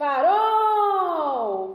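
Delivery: farol with forceful stress on final syllable -rol. Portuguese lesson on oxítona words: stress on last syllable 'rol' of farol. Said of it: "Perceberam aí a última sílaba pronunciada com mais força?".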